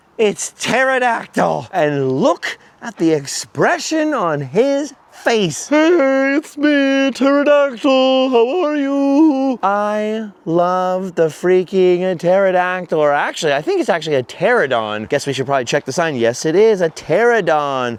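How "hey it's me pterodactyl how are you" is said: very high, slow put-on voice, "you" drawn out. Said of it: "that voice in my head partially comes from Pee Wee Herman".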